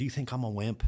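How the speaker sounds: acted-out, furious, in-your-face sergeant voice. Retelling what a sergeant said when switching jobs came up: imitating someone getting real mad. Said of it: "gets real mad and he goes".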